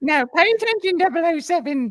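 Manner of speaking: belted out loudly, high-pitched, Cockney accent. Asked to do a British accent, the speaker tries again: Q impression in East End accent. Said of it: "Didn't realize Q was from the East End".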